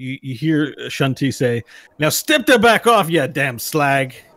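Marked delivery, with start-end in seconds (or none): 2.0-4.1 shouting dwarf character voice, louder. Game narrator voicing the dwarf wellmaster Shunti at a human woman, yelling. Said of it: "he seems to be yelling at another woman".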